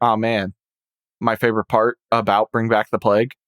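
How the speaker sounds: normal talking voice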